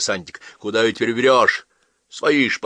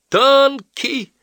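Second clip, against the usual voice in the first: very high, shrill shout; 6 dB louder than usual. A voice in the crowd raises the alarm: shouted. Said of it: "закричали в толпе".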